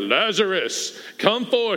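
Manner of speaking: low deep voice. Retelling the Lazarus story, quoting him being called from the tomb: deep voice. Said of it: "he always says it in a deep voice".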